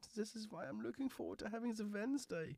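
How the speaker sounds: very high, soft, put-on German accent. On the show, chatting about this week's plans: high-pitched german accent. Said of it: "doing a very high-pitched German accent".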